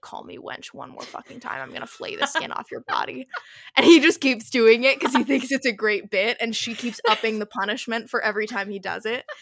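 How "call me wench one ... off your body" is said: mimicked muttering under breath, much quieter. Describing a companion he keeps calling wench, retelling her mutter under breath. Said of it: "she keeps under her breath being like".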